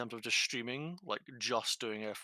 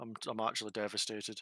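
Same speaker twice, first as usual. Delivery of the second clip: ordinary delivery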